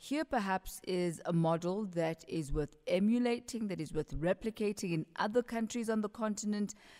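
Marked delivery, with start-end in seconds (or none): none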